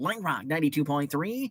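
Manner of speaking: put-on nasal voice. Trying to keep two people's voices apart, do a nasally Chris Wexell voice. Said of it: "Chris Wexell was more nasally".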